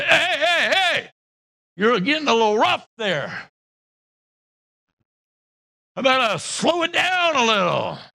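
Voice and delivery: coaxing, begging, pleading tone. Acting out the clay asking the potter to slow down: voicing the clay pleading with the potter. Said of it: "Imagine the clay going".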